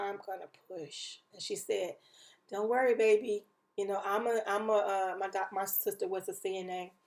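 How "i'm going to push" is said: barely audible, very quiet, urgent half-whisper. Retelling telling a sister during labor she would push: retelling a half-whisper. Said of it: "I remember whispering over to my sister".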